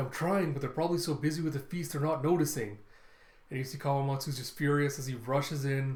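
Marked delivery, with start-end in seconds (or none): none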